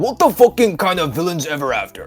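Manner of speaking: put-on Chinese accent. Told to do it again, repeating a show title in a fake Chinese accent. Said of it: "can you say in the Chinese voice".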